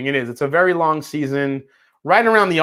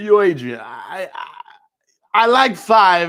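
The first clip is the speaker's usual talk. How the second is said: very slow drawl, every word drawn out; 3 semitones higher than usual. Doing a Rocky impression asked for by chat while tasting whiskey: Rocky impression. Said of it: "Where's your Rocky impression?".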